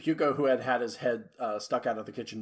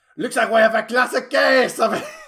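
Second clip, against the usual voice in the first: put-on French voice, higher and louder; 12 semitones higher, 14 dB louder than usual. Voicing a character, slipping into the wrong voice: French accent. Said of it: "That was French instead of French pirate".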